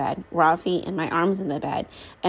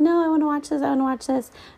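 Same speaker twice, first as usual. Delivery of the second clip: put-on, very high toddler tantrum screaming; 9 semitones higher than usual. Retelling a bedtime struggle as a child screams: imitating a child screaming. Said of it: "he's screaming".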